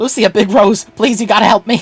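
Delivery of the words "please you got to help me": put-on slight New York accent. Voicing a game character begging for help: vague New Yorker accent. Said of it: "this guy has a vague, like, like, New Yorker a-".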